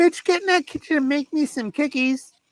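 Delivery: very high, full cartoon voice. Retell what you jokingly say to her, who knows you are joking, in an Eric Cartman voice. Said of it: "I usually do the Eric Cartman voice".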